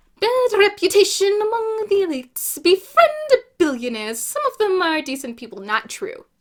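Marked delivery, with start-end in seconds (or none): 0.2-4.2 grand theatrical voice, big, loud and swooping. Talking about a favorite musical, showing how a character speaks, in Wicked's Madame character voice. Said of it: "And she speaks like this".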